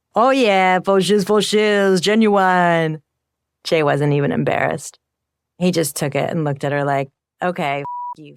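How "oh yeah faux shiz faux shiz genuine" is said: slow, excited, all worked-up voice. Retelling how she mocked Jay after he greeted a security guard: imitating Jay. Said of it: "did an impression of Jay".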